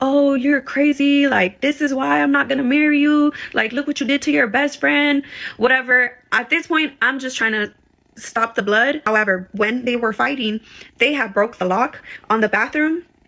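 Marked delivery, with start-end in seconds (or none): 0.0-5.2 mock yelling, higher pitch. Retelling a fight, acting out what someone else was yelling: retelling a yell. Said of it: "you could just hear Rich yelling like".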